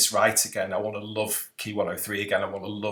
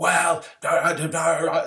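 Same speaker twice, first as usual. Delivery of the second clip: high, drawn-out, slow and deliberate shout; 7 semitones higher, 4 dB louder than usual. Retelling how the other man answered: imitating someone shouting. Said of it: "start shouting at me".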